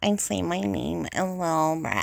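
valley girl voice, put-on accent. Saying their name as if they were a Valley Girl, in a Valley Girl voice. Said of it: "if I wanted to be a Valley Girl".

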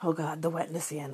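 ordinary delivery

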